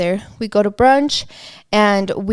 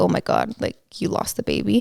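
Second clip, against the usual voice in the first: play-acted breathy whisper, crushed with devastation; 5 dB quieter than usual. Retelling how a mother reacted to a miscarriage photo: imitating a devastated voice. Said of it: "she said it so devastatingly".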